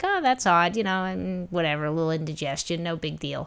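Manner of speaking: ordinary talk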